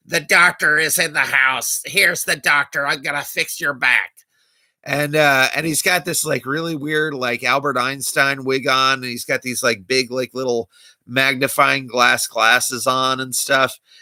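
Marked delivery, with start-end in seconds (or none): 0.1-4.1 put-on nasal character voice. Describing a film role, imitating Doctor Detroit, nasal voice. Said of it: "He starts talking all nasally like this".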